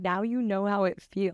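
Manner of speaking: ordinary talk, nothing marked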